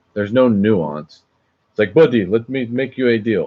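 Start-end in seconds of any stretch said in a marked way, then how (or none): 1.9-3.4 put-on speaking with a Saudi accent. Acting out how coworkers talk, in a put-on Saudi Arabian accent. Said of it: "that's more of a Saudi Arabian accent".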